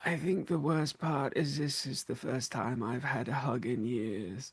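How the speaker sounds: very soft, low, crestfallen, deflated murmur. From around the corner during a hug, in a quiet, deflated Froderick voice. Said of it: "very sort of like quiet, deflated voice from Froderick going".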